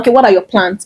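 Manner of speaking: ordinary talk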